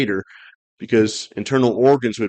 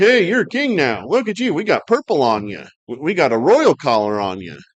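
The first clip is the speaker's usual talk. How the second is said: scornful, jeering, swooping sing-song voice; 4 semitones higher than usual. Retelling the soldiers taunting Jesus in a purple robe: imitating soldiers mocking. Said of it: "and they're mocking him".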